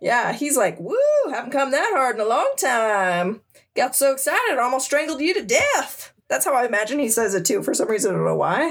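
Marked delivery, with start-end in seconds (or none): 0.8-6.1 slight country twang with the word time drawn out. Retelling a story, the speaker voices the douchebag's words with a slight twang. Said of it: "he's got almost a little bit of twain".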